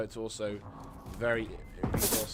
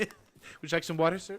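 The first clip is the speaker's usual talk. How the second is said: put-on servile, high, loud, overly polite waiter voice; 6 semitones higher, 5 dB louder than usual. Mocking an overly helpful game by playing a waiter: mock-polite waiter voice. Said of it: "That kind of level".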